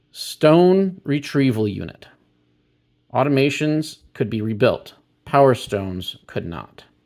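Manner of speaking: reading aloud, straight through like printed text. Reading card text aloud to viewers: reading fast. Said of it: "I'm reading these a bit fast".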